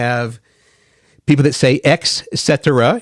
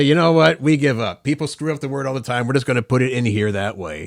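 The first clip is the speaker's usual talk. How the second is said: ordinary talk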